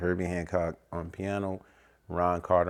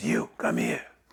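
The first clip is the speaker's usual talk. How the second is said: put-on raspy voice, pitched lower; 7 semitones lower than usual. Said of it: "he spoke with a rasp".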